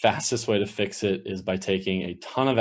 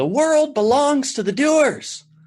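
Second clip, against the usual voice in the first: very high-pitched, very loud voice; 7 dB louder than usual. Recalling a high school coach, the speaker imitates his high-pitched voice. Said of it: "he had this high pitched voice".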